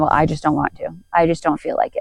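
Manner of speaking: ordinary talk, nothing marked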